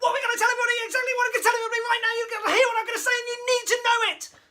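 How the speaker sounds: exploding, peak-intensity delivery at top of scale. A speaker demonstrates step five of a scale for speech, exploding. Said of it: "which would be exploding".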